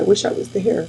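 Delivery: ordinary talk, nothing marked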